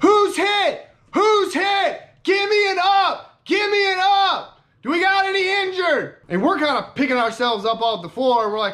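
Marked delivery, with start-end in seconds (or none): 0.0-6.2 put-on top-of-the-lungs scream, very high, drawn-out. Retelling how an officer screamed after a blast: imitating someone screaming. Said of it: "he's just screaming at the top of his lungs".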